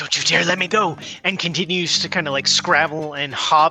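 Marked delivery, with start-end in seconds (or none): 0.0-1.0 whispered character voice. Narrating the scene and voicing Koei as she speaks, Koei whispering. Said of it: "Koei's whispering".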